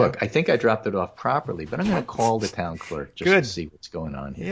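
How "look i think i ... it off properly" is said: usual speaking voice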